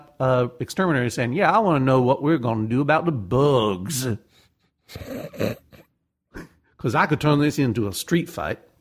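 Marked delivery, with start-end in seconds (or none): 1.3-8.6 put-on quasi-Cajun accent. Retelling a caller phoning an exterminator about bugs, in a quasi-cajun accent. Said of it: "quasi-Cajun accent".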